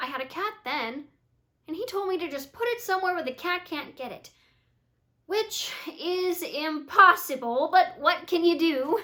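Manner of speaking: artless, guileless, naive, innocent delivery. April describes an experience from her past: naive. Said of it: "we see April naively describe an experience from her past".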